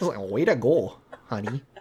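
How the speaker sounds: put-on hushed, soft Minnesota accent, middle-aged woman's voice. Congratulating the other host on winning this week, Minnesota aunt accent. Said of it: "like my aunt in Minnesota".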